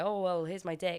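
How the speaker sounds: ordinary delivery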